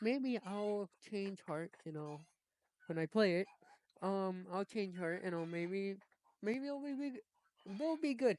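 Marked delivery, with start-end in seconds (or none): 5.5-8.4 stumbling stutter, pitched up. Speaker musing whether an upcoming game will turn out good, stuttering. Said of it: "I'm stuttering".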